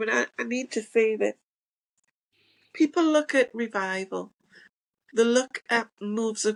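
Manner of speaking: tearful speech, crying through the words. Speaker addressing listeners, telling a painful story: crying while speaking. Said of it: "and I'm crying when I'm telling you".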